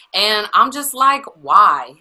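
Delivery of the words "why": mock skeptical, loud, pointed dismissive why. Retelling own reaction to the announcement: pointed dismissive tone. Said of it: "Why you gotta say it like that with that tone".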